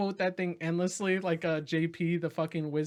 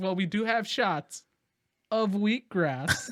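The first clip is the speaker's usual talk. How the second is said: slow, drawn-out, effeminate waiter-style voice; 3 semitones higher, 3 dB louder than usual. Retelling a movie scene, quoting the waiter: imitating David Spade's effeminate waiter voice. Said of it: "this effeminate, like, kind of, like, voice to him".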